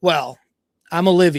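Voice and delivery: put-on snotty tone. Retelling a woman introducing herself with crossed arms: imitating a bitchy tone. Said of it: "Her real bitchy".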